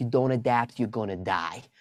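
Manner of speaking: put-on heavy, thick New York accent. Retelling what he said to them, thick New York accent. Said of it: "he had this thick New York accent".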